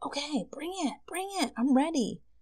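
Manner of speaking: mock-thrilled, very high-pitched, eager voice. Reacting to a reading about coming abundance and joy: excited. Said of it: "Sorry, I'm getting excited".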